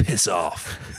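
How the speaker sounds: put-on angry cartoon monster voice. Retelling a cartoon scene, quoting another head's reply: imitating angry Ghidorah head. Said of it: "just so angry all the time".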